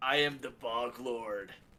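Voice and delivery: super loud character voice. Introducing the character they are playing, in a booming Bog Lord voice. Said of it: "I'm gonna do my voice super loud".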